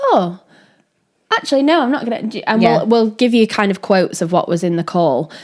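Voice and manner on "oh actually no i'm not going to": high, halting, hesitant voice full of pauses. Describing a woman on a call, imitating her hesitant pauses. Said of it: "pauses where she was like".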